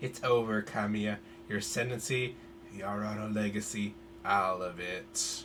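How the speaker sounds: quiet, sinister evil villain voice. Speaker voices a female villain confronting Kamiya; evil villain voice. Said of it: "I need a evil voice for her".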